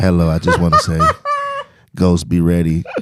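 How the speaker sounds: silky smooth, low voice with easy delivery. Retelling how a man came in and spoke: smooth voice. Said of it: "And he come in and just smooth as that".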